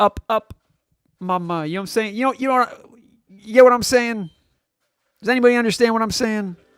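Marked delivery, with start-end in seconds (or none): 0.0-1.7 put-on baby voice, quieter and slower. Mocking someone who says up, up and away, imitating a baby. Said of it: "like a freaking baby who's asking his mother".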